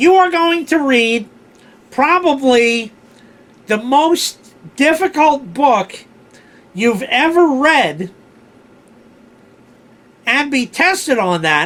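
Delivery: whiny, whinging voice broken into halting bits. Retelling what the head of the English department said on the first day of class, imitating a whiny, loud voice. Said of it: "he had this very whiny, loud voice".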